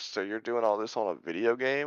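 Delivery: normal talking voice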